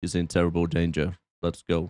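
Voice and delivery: put-on flat voice. Recapping a scene and quoting Dolph's reply: Dolph's mock dull, flat delivery. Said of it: "very dull Molentine blank face".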